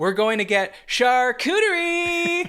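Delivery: very high, playful, jokey tone. Recounting a friend's reply while leaving a party, retelling a joking voice. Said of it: "like in a joking voice".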